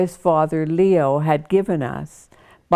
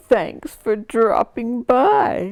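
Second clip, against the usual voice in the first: put-on pathetic, pitiful, pitched-up voice; 6 semitones higher than usual. Joking with family as they arrive or leave, in a mock-pathetic voice. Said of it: "we would say pathetically".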